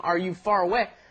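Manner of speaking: plain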